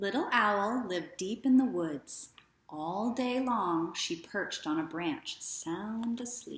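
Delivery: ordinary delivery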